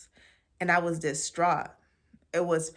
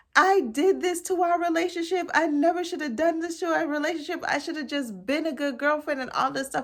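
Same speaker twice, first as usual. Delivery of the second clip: put-on very high voice, sobbing through every word; 11 semitones higher than usual. Retelling crying drunk after her partner left with another girl: imitating own crying. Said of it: "And I'm just crying".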